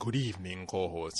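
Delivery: deep, hushed, low, soft vampire voice. Show host greeting the co-host, doing a Dracula voice. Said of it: "I was trying to get my Dracula voice going on".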